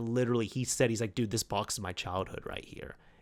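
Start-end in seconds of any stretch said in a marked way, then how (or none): 1.1-2.9 put-on teary voice, lower and quieter. Retelling how a visitor recognized his old console box: imitating someone tearing up. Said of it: "tearing up right there".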